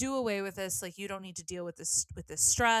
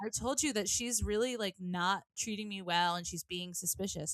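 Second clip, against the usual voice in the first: ordinary talk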